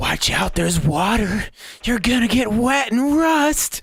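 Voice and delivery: hushed whisper. Recounting what they whisper to a creature in the room, the speaker is whispering. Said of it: "I'm whispering things like".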